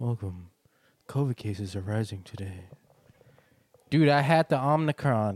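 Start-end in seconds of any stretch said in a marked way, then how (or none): 0.0-2.6 put-on radio news announcer voice, on-air newsreader style. Mocking how radio news presenters talk: imitating an NPR news voice. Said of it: "But they talk like this".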